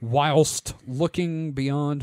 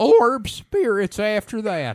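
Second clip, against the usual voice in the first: put-on wavering old prospector voice, much higher, louder; 8 semitones higher, 6 dB louder than usual. Told by another speaker to waver more, the speaker redoes the line in a wavering old-timey prospector voice. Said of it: "need to waver your voice a little bit more, like old timey prospect".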